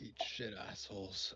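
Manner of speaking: barely audible, very quiet mutter under the breath. Speaking in character after guards leave: muttered under breath. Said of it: "very, very under my breath".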